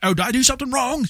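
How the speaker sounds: put-on New Zealand accent. Retelling a New Zealand player's question during a boss fight, in a New Zealand accent impression. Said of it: "my New Zealand accent's".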